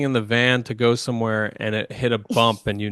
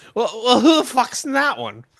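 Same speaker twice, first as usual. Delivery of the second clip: put-on very high, wasted, slurred drunken voice; 12 semitones higher, 3 dB louder than usual. Retelling what a drunk woman said leaving the bar: imitating a drunk woman slurring. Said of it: "wasted and slurring".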